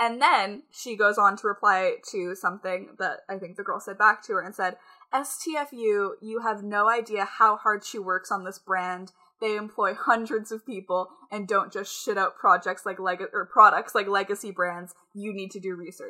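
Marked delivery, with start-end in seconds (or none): none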